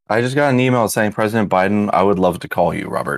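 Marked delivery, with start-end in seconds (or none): none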